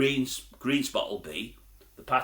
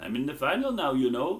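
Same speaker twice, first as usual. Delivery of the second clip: mock Welsh-accented delivery; 4 semitones higher than usual. Retelling a guest's classic closing line from an interview, in a Welsh accent. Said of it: "He did it in a Welsh accent".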